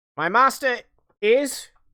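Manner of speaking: high, loud, quasi-feminine crow squawk. Voicing a creature that speaks for its master, in a quasi-feminine squawking voice. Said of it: "quasi feminine kind of squawking voice".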